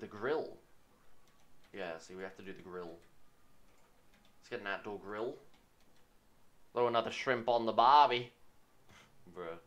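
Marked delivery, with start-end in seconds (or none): 6.7-8.3 put-on Australian accent, much higher pitch, louder. Speaker joking about getting an outdoor grill, in a stereotypical Australian accent. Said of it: "leaning into that stereotypical Australian".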